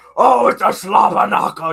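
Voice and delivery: very loud, drawn-out wrestling-announcer commentary yell. Picturing himself doing wrestling commentary like j r: j r commentary yelling. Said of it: "I totally go full J R".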